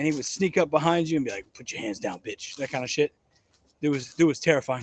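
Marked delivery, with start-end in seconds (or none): 1.5-2.6 very low, croaky whisper. Retelling how a sergeant snuck up behind people: imitating a very low croaky voice. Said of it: "He had the lowest, like, croakiest voice".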